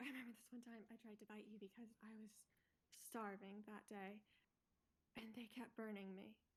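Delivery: character voice, hushed and spoken quietly. Speaking to a chained prisoner so a guard can't overhear: speaking quietly in character. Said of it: "I'm speaking quietly so that executioner guy can't overhear".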